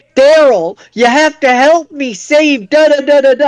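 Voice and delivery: goofy high-pitched dinosaur voice. Retelling a scene where a dinosaur appears at the window, the speaker does a goofy Barney voice. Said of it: "who then with a goofy voice is like".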